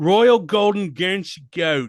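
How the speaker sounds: clumsy, bad put-on English accent. Speaker repeats a goat breed's title: bad English accent. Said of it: "it's my fuckhead English accent".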